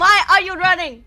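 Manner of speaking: very loud, high-pitched shout. A player's character yells at a creature eighty feet away, yelling. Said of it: "I'm gonna yell at it".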